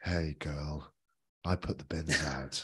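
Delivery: put-on sultry, smooth voice. Joking about their mellifluous voices for sexy talk: put-on sexy mellifluous voice. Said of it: "incredibly mellifluous voices to talk about, um, sexy things".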